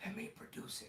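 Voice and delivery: soft, raspy voice in a whisper. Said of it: "he said in his raspy voice".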